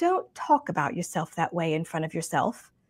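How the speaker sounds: put-on sweet British accent. Retelling her reply to an ugly remark about your own hair, in Lorraine Massey's sweet British accent. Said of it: "in her sweet British accent".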